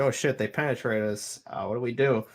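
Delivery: plain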